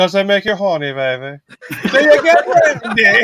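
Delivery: very high put-on voice swooping up and down. Teasing another speaker about his horns: Austin Powers impression. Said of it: "I gotta do the Austin Powers on you".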